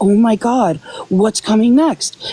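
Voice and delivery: mock panicky fretting, slow and drawn-out. Mocking people who are panicking about what comes next: imitating someone panicking. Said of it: "So if you're panicking, like".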